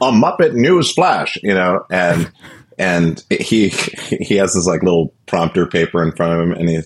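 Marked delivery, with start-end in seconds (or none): 0.0-1.4 very high, headline-reading newscaster announcer voice. Retelling a Muppet Show sketch: imitating the Muppet news reporter. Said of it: "And it'd be like".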